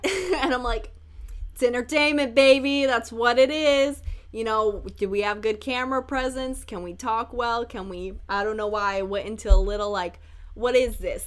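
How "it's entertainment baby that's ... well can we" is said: put-on loud, brash, belted-out Jersey accent. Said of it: "Like, a Jersey accent?".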